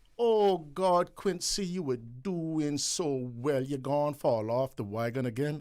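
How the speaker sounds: put-on Cayman Islands accent. Quoting what people say after a relapse: Caymanian accent. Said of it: "in my best Caymanian accent".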